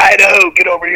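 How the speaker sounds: freaky, put-on drill instructor voice. Retelling how his drill instructor would call him over, freaky drill instructor voice. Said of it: "in his fucking freaky drill instructor voice like".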